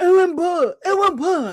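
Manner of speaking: put-on full-mouth talking. Retelling a radio caller answering with peanut butter in his mouth: imitating talking with mouth full. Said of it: "he's got his peanut butter in his mouth".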